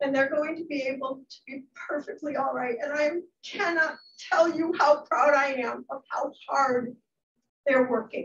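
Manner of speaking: tearful voice, speaking through tears, crying. A teacher speaking about her students' hard work, crying. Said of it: "I'm going to start to cry".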